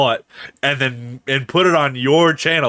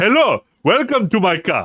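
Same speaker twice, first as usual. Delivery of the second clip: put-on, sing-song Nigerian accent at a higher pitch; 6 semitones higher than usual. Joking about being a taxi driver greeting a passenger: nigerian voice. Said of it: "just do like the Nigerian voice".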